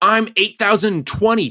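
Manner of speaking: put-on high, loud, petulant teen whine. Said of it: "Reese saying to his omnipotent father".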